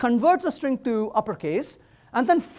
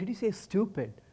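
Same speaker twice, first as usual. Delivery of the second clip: hushed, very quiet half-whisper, barely audible; 4 semitones lower, 11 dB quieter than usual. Retelling what his wife asked him: imitating wife half-whispering. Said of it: "And then she whispers back".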